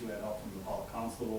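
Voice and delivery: ordinary talk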